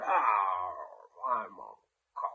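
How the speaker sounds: very slow, drawn-out, pirate-style drawl. Retelling a late-night phone call from a coked-out caller, imitating him talking like a pirate. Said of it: "He's talking like a pirate".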